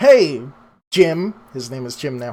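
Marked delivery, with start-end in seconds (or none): 0.0-1.3 calling out loudly, higher and louder. Voicing a character calling out to a buddy: yelling out. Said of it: "yells out".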